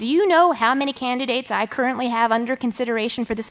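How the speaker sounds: ordinary delivery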